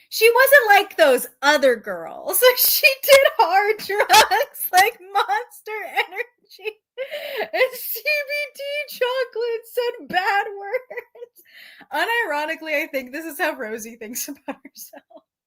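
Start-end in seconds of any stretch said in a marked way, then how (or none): 2.6-11.4 high, slow reading, laughing throughout. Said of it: "it fucking killed me".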